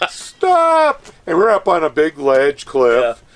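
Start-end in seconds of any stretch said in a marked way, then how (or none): 0.1-1.1 mock scream, pitched higher and louder. Retelling stopping the dig crew: retelling a scream. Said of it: "I just screamed".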